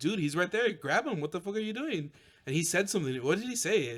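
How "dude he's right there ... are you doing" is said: play-acted, mild, exasperated half-shouted delivery. Retelling yelling at a Mandalorian cosplayer at a convention: retelling own yelling. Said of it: "I'm start yelling to the Mandalorian".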